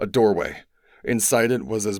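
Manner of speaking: ordinary delivery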